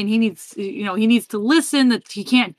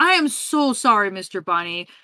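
put-on overly polite apologetic tone, quieter; 5 dB quieter than usual. Retelling how Jack apologizes to the Easter Bunny: imitating Jack's customer service voice. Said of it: "He puts on, like, customer service face".

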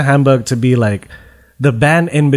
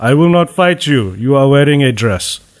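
mixed, all-over-the-place put-on foreign accent, Russian-sounding. Speaker retells a big man refusing to fight: Russian-sounding put-on accent. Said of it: "You Russian?".

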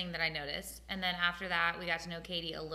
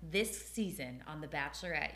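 ordinary talk

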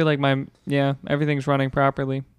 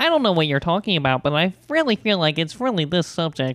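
put-on nasal librarian-like voice; 3 semitones higher than usual. Group member doing the nasally voice the others asked about, nasally librarian voice. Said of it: "You sound like a librarian when you do it".

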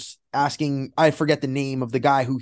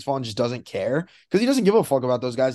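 usual speaking voice

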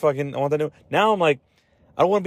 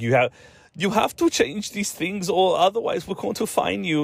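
put-on generic European accent; 5 semitones higher than usual. Complaining about the iPhone 15 change, voicing Europe's demand in a vague European accent. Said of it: "just doing a accent".

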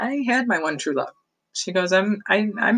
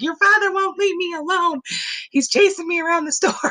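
put-on giggling talk, very high-pitched; 11 semitones higher than usual. Retelling what Grandma said to Mom about the store, imitating Grandma laughing. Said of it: "Grandma was laughing like".

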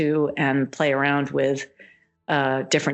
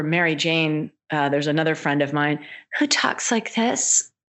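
ordinary talk, nothing marked

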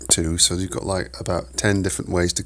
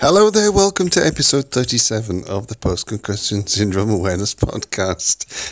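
loud, talking through laughter; 3 semitones higher, 5 dB louder than usual. Opening a podcast episode, the host welcomes listeners while laughing. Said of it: "sorry, I'm laughing".

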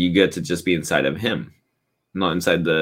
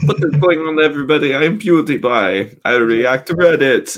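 put-on Swedish accent; 9 semitones higher, 4 dB louder than usual. Mocking an intro after talk of a Swedish accent: PewDiePie impression. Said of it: "his weird ass Swedish accent".

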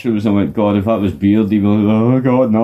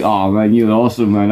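plain

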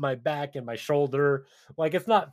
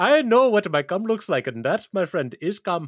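loud, fake, put-on Indian accent; 4 semitones higher, 5 dB louder than usual. Redoing a quoted line after being called out, in a put-on Indian accent. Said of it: "I felt like I was watching Slumdog".

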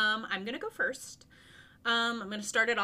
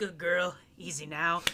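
put-on cowboy accent, lower; 5 semitones lower than usual. The speaker imagines a game character talking to her as to his horse: Arthur's cowboy accent. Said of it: "his dirty cowboy accent makes me weak".

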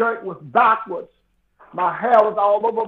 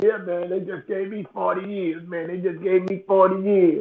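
ordinary talk, nothing marked

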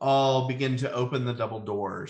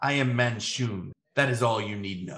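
almost hissing, disdainful, with no respect; 2 semitones lower than usual. Voicing a man at the end of the table answering dismissively: almost hissing, no respect. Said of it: "almost hisses".

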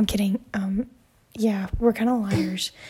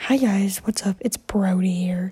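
put-on man's voice. Jokingly greeting the audience, putting on a man's voice. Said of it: "I sound like a man".

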